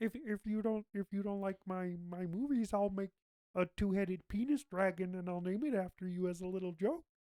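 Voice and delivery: cartoon frog puppet character voice. Acting out a moviemaker answering people who don't like his movies, in a Kermit the Frog voice. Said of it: "now you're doing Kermit".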